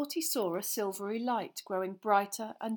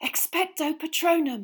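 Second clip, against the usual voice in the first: gasped-out words, high, loud; 8 semitones higher, 7 dB louder than usual. Harry, facing Dementors, casting a spell, gasping. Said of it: "he gasped".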